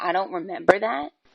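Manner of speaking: offhand, dismissive tone, brushing it aside. Quoting the other speaker's words back during an argument: imitating a dismissive tone. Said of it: "in a dismissive tone".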